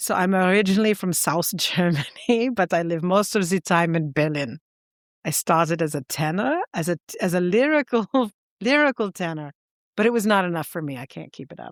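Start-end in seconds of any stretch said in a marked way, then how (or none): 0.0-9.5 put-on German-accented voice. Reading an interviewee's words aloud in his accent: imitating a german accent. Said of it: "am now going to do it in the accent".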